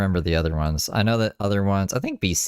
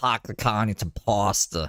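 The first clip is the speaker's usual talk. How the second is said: slow, deliberate Boston accent; 3 semitones higher than usual. Showing how people in Boston talk: Boston accent. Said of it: "That's how people in Boston talk".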